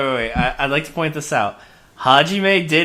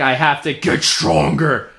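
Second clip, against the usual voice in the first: demonic, possessed-sounding voice. Retelling how a friend sounds mid-conversation: possessed-by-satan voice. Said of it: "It's definitely the possessed by Satan voice".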